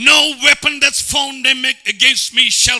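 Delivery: aggressive, loud, high-pitched delivery. The speaker demonstrates how to say the proclamation, as an aggressive proclamation. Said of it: "proclamation is speaking, confessing aggressively".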